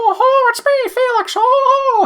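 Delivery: knockoff cartoon-mouse voice, very high and slow. Imitating the fifties cartoon voice of Felix the Cat: knockoff Mickey Mouse Felix voice. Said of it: "just obviously knockoff Mickey Mouse".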